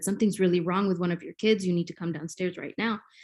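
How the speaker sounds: ordinary talk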